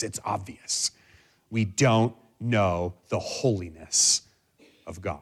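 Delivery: growling voice, words growled out. Quoting a teacher's usual answer to a question: R C Sproul growling voice. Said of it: "in his kind of infamous growling voice".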